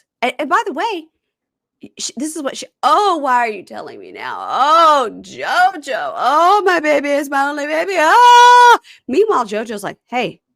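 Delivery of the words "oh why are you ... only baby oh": put-on loud, drawn-out wailing. Retelling a woman's reaction on hearing news, imitating someone wailing. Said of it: "she's bawling and crying and wailing".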